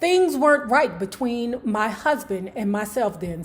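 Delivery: plain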